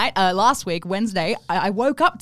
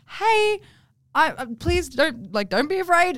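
put-on sweet honeyed voice, higher, slower; 8 semitones higher than usual. Retelling the first time seeing them, coaxing with honey, in a put-on sweet voice. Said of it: "give me your I have an issue with my neighbor like voice".

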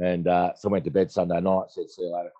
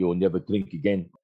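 put-on South African accent laid on strong. Retelling what a doctor told them about drinking: strong South African accent. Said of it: "strong South African accent".

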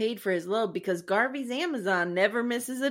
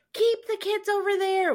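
mock yell, much higher; 9 semitones higher than usual. Speaker quotes a man yelling to Albert: imitating someone yelling. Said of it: "I love how he's yelling to Albert".

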